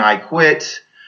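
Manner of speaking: ordinary talk, nothing marked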